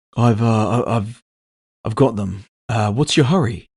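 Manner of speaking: nervous, hesitant, stammering delivery. A records clerk selling secrets answers an impatient buyer, nervous and stammering. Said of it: "His name was [name] Riley. He worked in the records department. Human, mid-thirties. Twice he'd been refused attempts at promotion, and apparently he was now an entrepreneur. / He looked like he hadn'".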